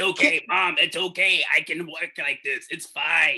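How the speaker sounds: demonic possessed voice. A child reassures their mother that they are fine, in a demonic possessed voice. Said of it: "you sound like the fucking exorcist".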